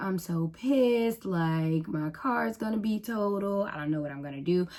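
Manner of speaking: acted-out crying. Retelling what she told her mom while waiting for the police, imitating crying. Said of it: "I'm crying to my mom".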